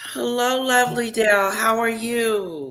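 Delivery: weary, worn-down tired tone with "you" drawn out. Greeting Dale, in a tired voice. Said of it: "You sound tired".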